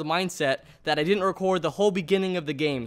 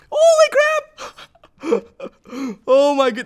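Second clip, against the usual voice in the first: very high-pitched, squeaky, shrill, loud shriek; 10 semitones higher, 9 dB louder than usual. Reacting right after a fight ends, in a very high-pitched voice. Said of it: "That was the highest voice I've ever made".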